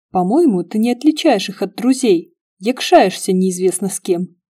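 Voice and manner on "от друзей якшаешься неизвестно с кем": ordinary delivery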